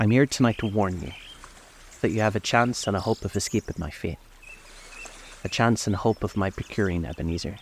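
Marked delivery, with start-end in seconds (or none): none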